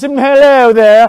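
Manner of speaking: hacky, cheap, put-on English accent. Mocking a wrestler's accent bit on TV: Xavier Woods English accent. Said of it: "weirdos in English accents".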